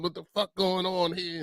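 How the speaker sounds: put-on, all worked-up, upset, flailing outburst. Retelling Reese flailing on the show: imitating someone upset. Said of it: "getting all upset and flopping her arm".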